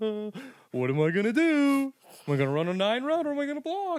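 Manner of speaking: very high, loud, utterly lost, baffled tone. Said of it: "Carson would be like".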